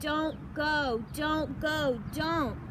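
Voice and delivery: growling, very slow and drawn out. Rushing to his friend as the sky rumbles, he growls. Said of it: "he growled".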